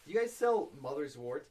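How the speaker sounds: usual speaking voice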